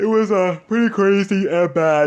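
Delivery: words stretched by a yawn. Recapping a crazy story to viewers, yawning while talking. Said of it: "sorry guys, I'm yawning".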